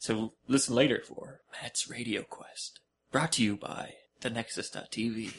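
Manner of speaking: very hushed, slow, sinister ominous whisper. Announcing an upcoming segment as a joke: put-on ominous whisper. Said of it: "whispering is, sounds so much more ominous".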